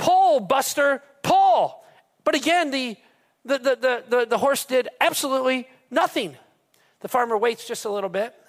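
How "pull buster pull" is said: loud, drawn-out high yelling. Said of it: "yells out a, a third time".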